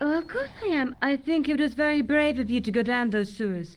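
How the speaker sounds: sarcastic, clearly insincere, praising tone. Answering a man who shows her the tool he used in the sewers, sarcastic reply. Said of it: "I think she's being sarcastic".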